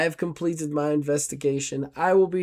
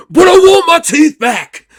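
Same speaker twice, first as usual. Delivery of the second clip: very high, loud, yelping, protesting tone; 14 semitones higher, 15 dB louder than usual. Voicing Jova waking up after a finger snap: voicing Jova. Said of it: "Jova, like, gets up, he's like".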